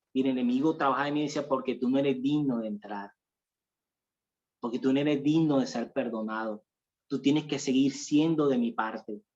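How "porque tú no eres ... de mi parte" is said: plain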